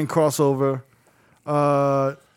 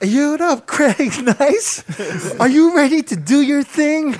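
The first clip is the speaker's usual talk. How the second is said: very high, slow, drawn-out cheerleader energy; 11 semitones higher, 4 dB louder than usual. Acting out the DJ's hype greetings: imitating Cassidy's cheerleader voice. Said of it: "It was like that cheerleader energy".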